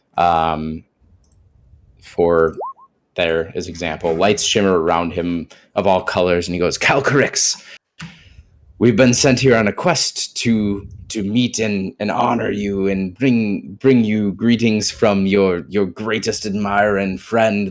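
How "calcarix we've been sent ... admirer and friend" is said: over-exaggerated, grand, theatrical delivery. Voicing a character greeting a dragon on a quest: over-exaggerated grand greeting. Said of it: "all of this is very, like, over-exaggerated".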